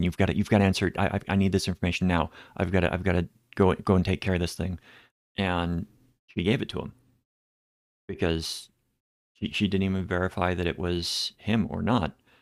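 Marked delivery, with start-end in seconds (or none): 0.0-4.8 pushy, rushed, rattled-off fast-talking scammer voice. Telling how a scammer called his mom, imitating fast-talking scammer. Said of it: "was talking very fast".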